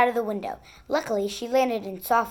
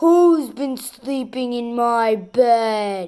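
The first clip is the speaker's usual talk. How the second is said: big growling voice with bed drawn out; 5 dB louder than usual. Reading the three bears story aloud, Daddy Bear's great big growl. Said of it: "and [name] saw that the big spoonful had been taken from his bowl. In his great big bear voice, he growled, "Who's been eating my porridge?" / he growled, / In his great big bear voice, he growled, /".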